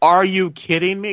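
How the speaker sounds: high, loud, slowed yell. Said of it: "I yelled out loud".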